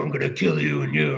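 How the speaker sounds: cliché, very low, growling Viking warlord voice.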